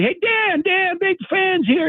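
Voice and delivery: very high, screaming yell. Retelling a dad screaming to get a player's attention: imitating a man screaming. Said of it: "the dad's screaming".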